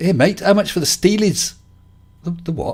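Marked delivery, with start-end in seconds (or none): 0.0-1.5 put-on teenage boy's Scouse Liverpool accent. Quoting a fourteen-year-old lad on a bike beside his lorry, in a Scouse accent. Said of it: "I'm going to try the accent".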